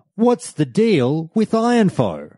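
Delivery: very high, swooping, sing-song stand-up cadence. A self-described noob asks the audience a question, in full Jerry Seinfeld voice. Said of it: "I'm going to say this in full Jerry Seinfeld voice".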